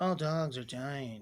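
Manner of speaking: soft, slow, flat deadpan monotone drone. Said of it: "it like monotone and deadpan".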